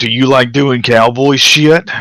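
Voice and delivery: high, rising bellow. Retelling a man yelling questions at a group: retelling a louder yell. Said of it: "And then he yells even louder".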